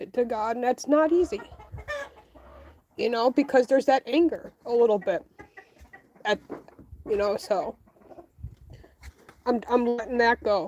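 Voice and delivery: a little choked up, halting, letting go. Speaker admits to getting a little emotional while talking. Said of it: "the reason why I'm getting a little emotional".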